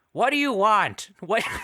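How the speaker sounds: very high, shrill, loud, botched acting voice. Trying to talk like an actor, imitating an actor's voice. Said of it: "I think it's easier to talk like him".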